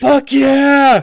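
high, loud, whooping war cry. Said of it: "he's like".

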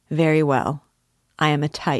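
ordinary delivery, nothing marked

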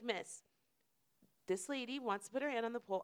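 acted, put-on polite voice. Speaker retells asking a woman to let another lady hold the pole, retelling her polite request. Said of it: "I'm being mad polite right now".

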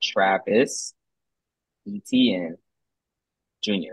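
said very slowly. Fantasy segment host repeating a name for someone who missed it, said real slow. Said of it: "I'll say it real slow".

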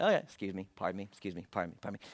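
casual, polite voice. Retelling Jesus slipping through a yelling, screaming crowd: imitating Jesus politely excusing himself. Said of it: "and Jesus is like".

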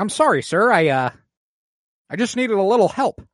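exaggerated high, swinging put-on voice.

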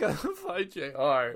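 put-on crying in a drunk man's voice. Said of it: "A full-grown adult crying on the stairs".

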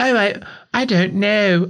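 very high, drawn-out feigned innocence. Acting out a politician's reply, which turns into a Basil Fawlty voice. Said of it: "I made him sound like Basil Fawlty then".

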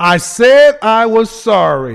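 loud, slow, play-acted, drawn-out, full of attitude. Quoting what she says after being asked a few questions: imitating her with attitude. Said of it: "And she says it with an attitude".

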